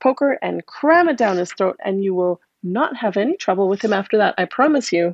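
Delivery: ordinary delivery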